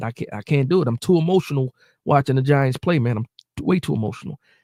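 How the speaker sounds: ordinary delivery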